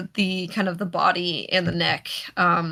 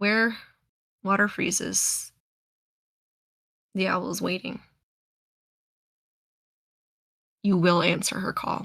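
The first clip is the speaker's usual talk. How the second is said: growling, growly, wolf-like creature voice; 6 dB quieter than usual. Storyteller voicing a frost-breathing creature as it speaks to the players, growly wolf-like voice. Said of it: "in a very like growly, kind of wolf-like tone".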